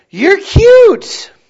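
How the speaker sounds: very high, loud singsong.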